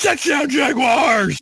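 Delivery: excited, very high-pitched radio announcer call. Retelling the Jaguars radio play guy after a score, imitating an announcer lighting up. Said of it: "like he lit back up".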